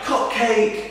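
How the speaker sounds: high mock shout, heckling. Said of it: "someone shouted".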